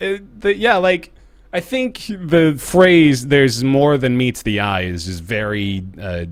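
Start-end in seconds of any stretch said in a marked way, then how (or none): none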